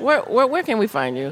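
plain

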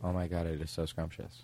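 very quiet, hushed, offhand, insincere tone. Acting out tasting a pie another performer offers: insincere, just saying it. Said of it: "You seem like you're just saying it".

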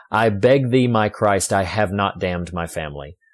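normal talking voice

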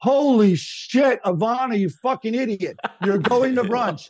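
furious yelling at a high pitch.

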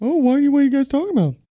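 very high, loud put-on dog voice. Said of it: "that's way too high".

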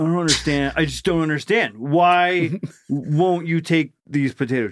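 acted-out, high, fed-up, baffled, exasperated frustration. Acting out a drunk customer trying to pay with chips: acting frustrated. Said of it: "he's so frustrated".

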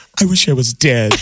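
mock crying while speaking. Acting out an imagined murderer who tastes salty bisque: acting out tearful crying. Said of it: "tears are coming down his cheeks".

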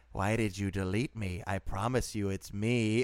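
eerie, unsettling, creepy horror-host storyteller voice. Speaker quotes a clip a man sent a woman who unmatched him; Crypt Keeper voice. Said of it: "I like how you did a Crypt Keeper voice for that".

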